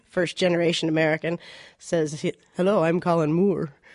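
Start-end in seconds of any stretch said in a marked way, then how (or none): 2.5-3.6 put-on awkward, slightly English accent. Retelling how she first met her husband Colin Moore, Colin Moore's awkward English accent. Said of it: "says in an awkward, slightly English, weird accent".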